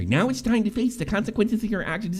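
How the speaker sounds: mock kindergarten-teacher voice, parodying tone. Mocking how an adult scolded a streamer, mock kindergarten-teacher voice. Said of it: "Sounds like a fucking kindergarten teacher".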